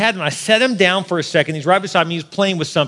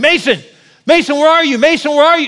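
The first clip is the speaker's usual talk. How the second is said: mock shrill, desperate, very high loud calling scream; 9 semitones higher, 6 dB louder than usual. Recalling losing track of your son, retelling screaming for your son. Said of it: "I'm just screaming Mason's name".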